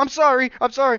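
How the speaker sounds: put-on panicked voice. Retelling panicking over a mess: retelling own panicked apology. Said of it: "I panic".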